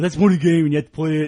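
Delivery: put-on know-it-all voice. Retelling what people online say about a game: imitating an internet commenter voice. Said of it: "I'm putting on my voice, my internet voice here".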